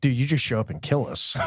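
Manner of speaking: ordinary talk, nothing marked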